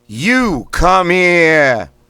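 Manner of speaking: Boston accent, very high, very loud, drawn out. Leading a voice exercise, the speaker says the phrase in a boston accent. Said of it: "It's going to be in a Boston accent".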